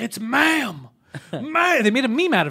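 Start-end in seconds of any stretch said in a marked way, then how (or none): 0.0-1.8 play-acted furious yelling, high-pitched. Speaker retells a furious customer yelling at a store clerk, retelling an angry yell. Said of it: "he started yelling at the kid".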